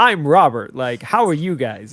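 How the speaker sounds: cheery, chipper, in-your-face, pushy delivery. Retelling how the character Robert spoke: cheery missionary Robert voice. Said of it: "I'm like".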